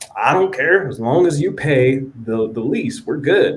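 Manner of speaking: slight southern twang. Quoting the man who agreed to their housing plans: slight southern twang. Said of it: "a little bit of an accent, a little southern twang".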